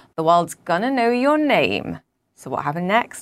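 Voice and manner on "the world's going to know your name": poor put-on American accent, swooping. News presenter quoting the Disney chairman's reply to a viral tweet, in a bad American accent. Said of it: "my poor attempt at an American accent".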